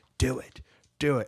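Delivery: unhurried, slow, drawn-out, goading villainous voice. Retelling a deleted scene where the Joker is held at gunpoint: imitating the Joker taunting. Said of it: "he's just like".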